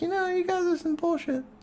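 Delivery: very high-pitched voice, way up in register. Retelling what they said as a guardian about the cost of the perks: high-pitched voice. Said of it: "in my high pitched, high me voice".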